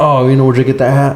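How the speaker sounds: usual speaking voice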